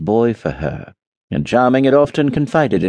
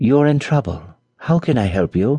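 kindly, affectionate, tender, caring voice. A prince offers help to a princess in trouble, tender. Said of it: "he said tenderly".

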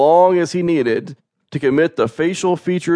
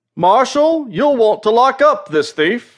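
proud, very high voice; 10 semitones higher than usual. Henry drags a tearful young woman before the marshal, proudly. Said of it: "Henry said proudly".

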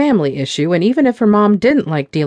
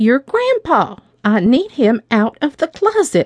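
loud, slow, pitched-up careful voice; 7 semitones higher than usual. Narrator voicing a grandmother repeating herself to her granddaughter, speaking loudly as if to the hard of hearing. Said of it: "She took a frail hand and held it in hers. I'm dying and I need things taken care of before I go".

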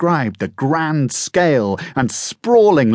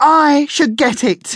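insistent, very high-pitched, slow delivery; 14 semitones higher, 3 dB louder than usual. Coco joins her siblings' argument after Chestnut and Nutmeg: demanding. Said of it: "demanded Coco".

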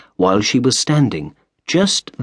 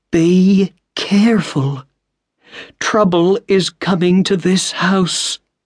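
trembling, shaking, pitched-up voice full of dread; 8 semitones higher than usual. Mrs. Umney sits up and answers Mr. Otis, her voice shaking. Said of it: "her voice shaking".

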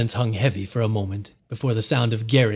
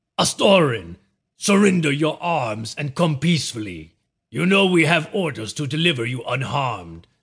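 rough-voiced, called out; 3 semitones higher than usual. A Shadiri captain calls on the prince to surrender, rough voice, calling out. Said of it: "called out in a rough voice".

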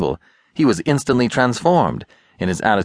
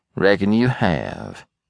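drawn-out, calm, cool sarcastic delivery. Catley answers a rebel who has just threatened him, with slow, cool sarcasm. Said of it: "rejoined Catley with slow, cool sarcasm".

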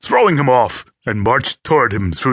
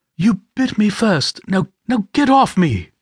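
urgent, panicked, polished upper-crust English voice, pitched up; 9 semitones higher than usual. Reading a woman's line as she fights off a man: panicked polished upper-crust English voice. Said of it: "Panic and urgency rang in the polished upper-crust English voice".

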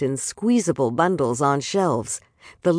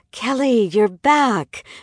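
delighted, high, happy, glad tone; 7 semitones higher, 4 dB louder than usual. Hurrying into the room to greet someone who has just come back, delighted. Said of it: "said in a delighted voice".

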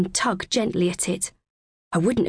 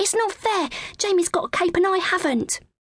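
very high, exclaimed, cried-out voice; 11 semitones higher than usual. Harry, wanting the narrator's cape, protests, crying out. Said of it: "cried Harry".

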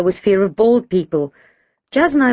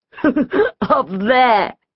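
light chuckle, pitched up; 5 semitones higher than usual. George answers the narrator's question about where Kim is: chuckling. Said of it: "George chuckled".

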